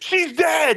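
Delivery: mock shrill, very high, blurted yelling outburst. Retelling a wrestler yelling random things: imitating Tommaso Ciampa yelling. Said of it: "yelling random shit".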